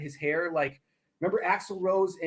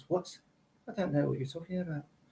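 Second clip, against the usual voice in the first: put-on affected upper-class British accent; 4 dB quieter than usual. Explaining British accents to a listener, then doing a Prince Charles impression. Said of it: "and then there's like Prince Charles".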